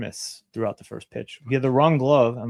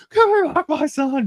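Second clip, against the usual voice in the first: very high, loud, desperate, anguished scream; 5 dB louder than usual. Retelling what the crowd kept yelling, in a Mel Gibson screaming impression. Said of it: "Like Mel Gibson screaming at it".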